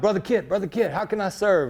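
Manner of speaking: imitated Jamaican accent. Recalling a man called Roots who always wanted to help, doing Roots's Jamaican accent. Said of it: "Roots had this Jamaican accent".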